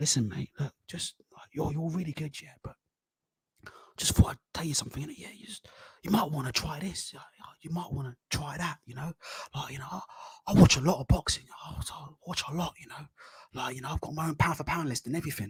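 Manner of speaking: low, hushed, confiding voice, leaned in. Mocking people who come over at the gym, imitating a lowered voice. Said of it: "They come over and they start lowering".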